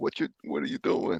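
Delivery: mock startled outcry, screamed and blurted out. Retelling the wife's reaction to flooring the car: imitating wife screaming. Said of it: "my wife screams, like".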